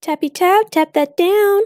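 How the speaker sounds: voice suddenly shooting up very high. Tapping down soap base in a container, high-pitched voice. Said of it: "Don't know why my voice got so high there".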